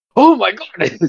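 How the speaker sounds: very high, startled, fervent exclamation. Retelling how an old fan turned around: imitating a fervent exclamation. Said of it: "he just turned around with such a fervor".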